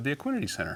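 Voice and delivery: Equinity stressed, lifted high then landed. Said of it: "I said".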